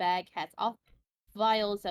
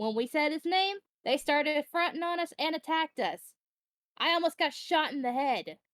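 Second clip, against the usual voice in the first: irritated, heated, angry, pitched-up outburst; 7 semitones higher than usual. Telling another character about being attacked: angry. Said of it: "Why you sound angry?".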